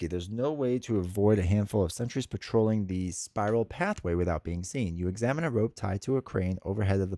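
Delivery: plain reading voice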